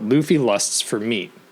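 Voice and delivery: normal talking voice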